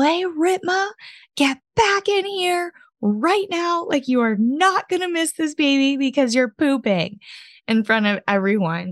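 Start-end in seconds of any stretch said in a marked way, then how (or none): 0.0-7.2 acted, very high, shrill, appalled scream. Retelling screaming at the husband in a room full of people: retelling own scream. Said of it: "I screamed".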